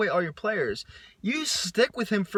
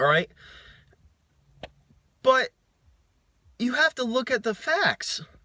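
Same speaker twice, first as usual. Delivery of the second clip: voice cracking and breaking mid-line; 4 semitones higher than usual. Arguing about a player the head coach kept, looking at the facts, voice cracking. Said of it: "sorry for my voice cracking right there".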